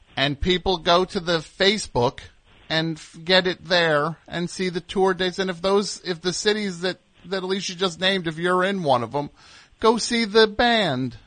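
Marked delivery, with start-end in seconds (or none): 5.4-11.1 earnest, pleading, begging tone. Urging listeners to see the band on tour: pleading tone. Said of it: "I'm saying it in such a pleading way".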